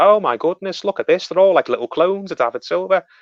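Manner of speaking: soft cooing, adoring commentator voice. Retelling how the commentators cooed over a young player: imitating Martin Tyler and Gary Neville cooing. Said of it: "cooing on commentary".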